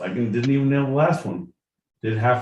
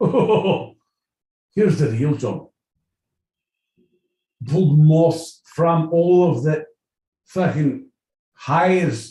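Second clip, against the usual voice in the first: put-on Scottish accent, higher and louder; 3 semitones higher, 4 dB louder than usual. Answering a question from John, in a Scottish accent. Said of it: "in a Scottish accent".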